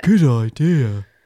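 loud, booming, belted cartoon-style delivery. Repeating a cartoon skeleton's catchphrase: Funnybones big skeleton impression. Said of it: "that was a good impression".

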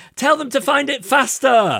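very high, slow, drawn-out shout. Retelling what she shouted during the task: imitating someone shouting. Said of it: "she was shouting something like".

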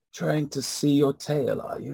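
feeble, weak, soft, high-pitched voice. Game narrator voices an unseen speaker to a player looking at their back, weak voice. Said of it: "you hear a weak voice say".

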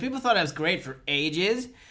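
put-on loud, camp, over-the-top American accent. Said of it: "Camp American".

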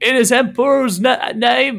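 calling out loudly. Game master voicing a guard atop the gatehouse calling down to the players, shouting. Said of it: "one of the guards calls down to you and shouts".

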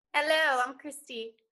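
put-on British accent. Playing a contestant at a mock audition, greeting the producer: British accent. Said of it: "run your audition in your British accent".

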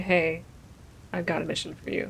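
sultry, seductive talking dog voice. Retelling what a talking dog said on waking them: sultry dog voice. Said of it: "quite sultry voice".

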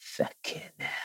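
tiny, hushed, whispered little voice. Recalling a cinema twist, the speaker quotes a woman nearby in a tiny little voice. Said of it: "this tiny little voice just go".

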